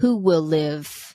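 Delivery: put-on deep, creepy tone. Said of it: "came through in a deep, creepy tone".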